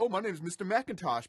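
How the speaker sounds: inhuman robotic text-to-speech computer voice. Retelling a movie scene where a man buys a house by computer, Macintosh computer voice. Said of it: "he uses the computer voice".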